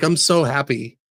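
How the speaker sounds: put-on sobbing voice. Retelling a scene where a character starts sobbing: imitating a character sobbing. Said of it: "He starts sobbing and crying".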